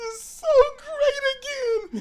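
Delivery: mock sobbing, very high, greatly stretched out. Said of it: "Now I'm teared up, and I'm crying".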